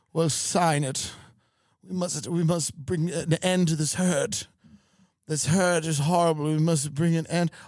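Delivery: fake posh, upper-class British accent. Playing a rich person at home in Malibu, posh fake British accent. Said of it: "I talk like this because I'm very rich in America".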